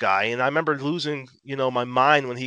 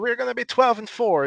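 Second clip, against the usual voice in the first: very bad put-on Russian accent, pitched up; 9 semitones higher than usual. Retelling own drunk preseason prediction: worst Russian accent. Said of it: "in my worst Russian accent".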